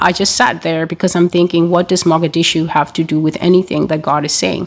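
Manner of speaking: ordinary talk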